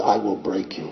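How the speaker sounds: low, quiet put-on Russian accent, broken English. Speaker retelling a towering Russian opponent's threat, broken Russian-accented English. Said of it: "in his broken English-Russian accent".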